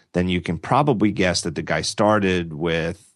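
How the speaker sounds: normal talking voice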